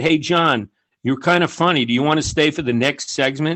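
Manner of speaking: ordinary talk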